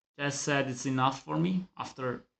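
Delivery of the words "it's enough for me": plain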